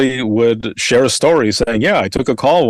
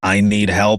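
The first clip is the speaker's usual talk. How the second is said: put-on robotic voice, lower and slower; 3 semitones lower than usual. An emergency call-taker retelling a caller's first words, imitating a robotic voice. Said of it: "they sound kind of robotic".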